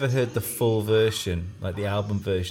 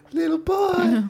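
very high-pitched, loud cartoon old man voice; 5 dB louder than usual. Picturing the old guy from Family Guy turning up: old guy from Family Guy voice. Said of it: "all I've got is the old guy from Family Guy".

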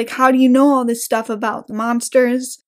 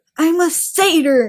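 indignant, miffed, put-out, pitched up; 5 semitones higher than usual. Recapping a story, acting out a character correcting another: mock-miffed correction. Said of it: "that really miffs Grover off enough".

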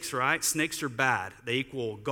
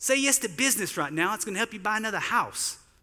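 put-on Australian accent, quick and high; 6 semitones higher than usual. Retelling what a man who prayed for the speaker said, in an australian accent. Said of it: "In my best Australian voice".

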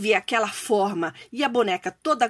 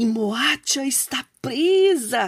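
whisper holding back laughter. Anansi watches the gum doll trap Moasha, beside Nintikuma; whisper, stifling a laugh. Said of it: "sussurrou Anansi, sufocando um riso".

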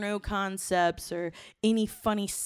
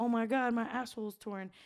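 put-on embarrassed tone, quieter; 3 semitones higher, 4 dB quieter than usual. Retelling a mishap in bed with a guy: reenacting embarrassment. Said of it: "and I'm like so embarrassed".

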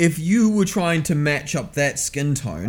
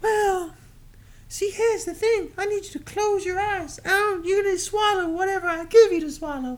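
very high put-on falsetto voice. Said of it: "What's the favor, [name]?".

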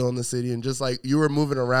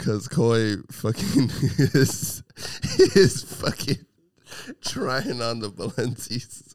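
talking while cracking up with laughter. Apologizing while watching someone try on the balencis, laughing while talking. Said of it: "I'm laughing".

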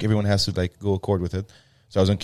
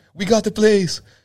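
put-on very high, loud, thrilled, excited shout; 13 semitones higher, 6 dB louder than usual. Telling how she reacted on getting to Barris's reception, retelling her excited yell. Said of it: "I can hear she's yelling".

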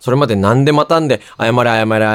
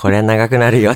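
put-on very gentle, soft delivery. Retelling the line someone said while getting into a car, imitating a very gentle tone. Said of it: "めちゃくちゃ優しい言い方だったんですよ".

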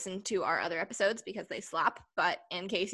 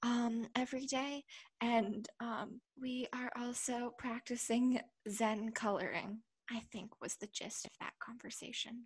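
mock ASMR voice, higher and quieter; 4 semitones higher, 6 dB quieter than usual. Answering how they have been doing, jokingly: put-on asmr voice. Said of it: "this is my A S M R voice".

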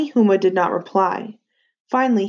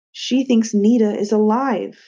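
plain reading voice

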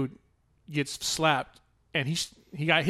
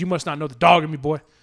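put-on barking, threatening tone; 3 dB louder than usual. Retelling a fighter's line to his opponent: imitating someone barking a threat. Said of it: "barks at him".

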